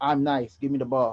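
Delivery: ordinary talk, nothing marked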